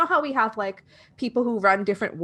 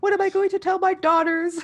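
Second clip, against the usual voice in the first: put-on tearful crying voice, higher; 10 semitones higher than usual. Retelling a scene where she is being questioned: imitating someone crying. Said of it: "really crying".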